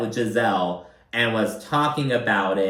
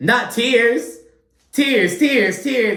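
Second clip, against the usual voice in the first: put-on very high, loud, shrill jeering tone; 12 semitones higher, 5 dB louder than usual. Retelling a taunt aimed at someone crying: imitating Gizelle mocking. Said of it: "Gizelle starts mocking".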